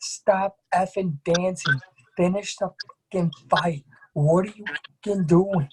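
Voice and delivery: heated, high-pitched, mild yelling. Retelling watching a fight in a bar: imitating own screaming. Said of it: "I'm in the bar and I'm screaming".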